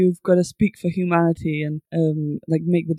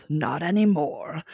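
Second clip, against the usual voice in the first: put-on, would-be tough badass delivery; 4 dB quieter than usual. Retelling a character's reply to the Doctor: imitating a badass delivery. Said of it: "he tries to say it in a really badass way".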